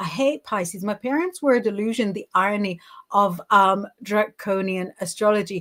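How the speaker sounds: ordinary delivery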